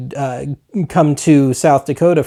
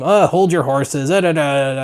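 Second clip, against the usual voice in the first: put-on cranky, put-upon, grouchy grumbling mutter. Acting out own reaction when the doorbell rings: imitating own grumpy grumbling. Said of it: "just grumping about it and spending more time being a friggin' grouch".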